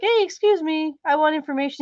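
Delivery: tiny, high little puppet voice. Mocking a story scene, imitating a little puppet asking: imitating a little puppet asking. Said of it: "this little puppet walks up and is like".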